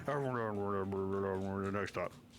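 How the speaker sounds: low, mumbled, garbled announcer voice, then stretched out. Imitating the train announcements that can never be understood: unintelligible announcement. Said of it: "I can never understand them when they do announcements".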